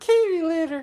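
put-on silly, very high baby talk voice. Recalling a running greeting between two people, in a silly babyish voice. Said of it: "in that voice, we'd go".

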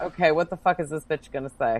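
ordinary delivery

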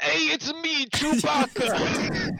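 very high, very slow, loud, drawn-out, swooping sing-song. Doing a requested impression for the stream: Chewbacca impression. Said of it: "I'll do Chewbacca".

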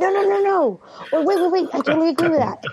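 high-pitched mock yelling. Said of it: "I'm yelling".

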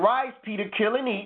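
ordinary talk, nothing marked

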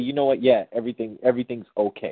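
ordinary talk

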